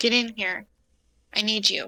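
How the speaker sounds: urgent shouted whisper pushed to carry. In a tabletop game, a character calls someone over near the cells, yell-whisper. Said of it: "like yelly quietly".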